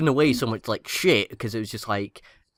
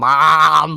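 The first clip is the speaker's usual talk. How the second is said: really bad, very loud, drawn-out fake American accent; 4 semitones higher, 8 dB louder than usual. Mocking how americans say the word, in a really bad fake american accent. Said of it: "a really bad fake American accent".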